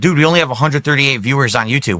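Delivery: plain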